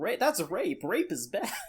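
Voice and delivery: high, squeaky little fairy voice, swooping yell. Imagining a little fairy beside the Goblin Slayer calling things out, squeaky little yell. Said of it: "yells out in a squeaky little voice".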